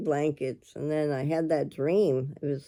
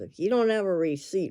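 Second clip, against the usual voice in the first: sarcastic delivery; 4 semitones higher than usual. Retelling what someone said at the counter: imitating a sarcastic remark. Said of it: "real sarcastic to me".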